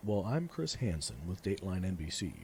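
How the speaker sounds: normal talking voice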